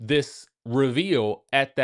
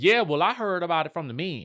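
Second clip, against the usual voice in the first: put-on Southern accent; 3 semitones higher than usual. Retelling a cast member's remark at a dinner: imitating a Southern accent. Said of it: "she got a Southern accent, so she talked like that".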